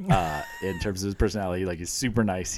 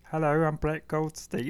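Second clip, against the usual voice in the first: soft-spoken, slightly high-pitched voice; 8 semitones higher than usual. Comparing his Roy Kent voice with his real voice, Brett Goldstein's soft-spoken voice. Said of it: "it's very soft spoken".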